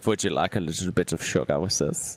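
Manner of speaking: low, put-on German accent. Speaker imitates a co-host who helps fix stuff, in a put-on German accent. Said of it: "He says in the German accent".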